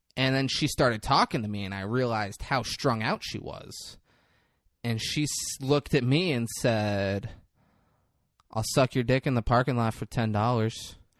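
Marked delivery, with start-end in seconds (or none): 8.5-11.0 put-on flat, emotionless, deadpan delivery. Retelling what a girl at the store said: imitating an emotionless delivery. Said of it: "no emotion in her eyes".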